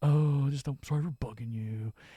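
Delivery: mopey put-on character voice. Retelling how the actor sounds in a scene: imitating Dean's voice. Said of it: "his voice here is".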